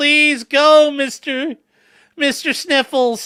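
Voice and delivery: high, drawn-out, weepy, tearful pleading tone. Retelling a dressage rider begging her horse to go: imitating someone crying and pleading. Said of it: "she's sitting there crying".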